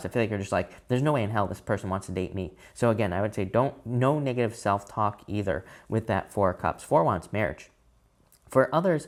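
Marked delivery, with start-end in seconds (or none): none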